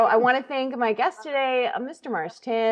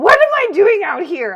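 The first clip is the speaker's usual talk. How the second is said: put-on very loud, high-pitched drunken holler; 8 semitones higher, 10 dB louder than usual. Retelling how a drunk host shouted through the curtain: imitating a drunk man shouting. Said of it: "he just shouts through the curtain".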